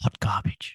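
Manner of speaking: hushed, sighing, quiet whisper with no emphasis. Giving a verdict on something just finished, quiet whisper. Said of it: "Just quietly whispering it".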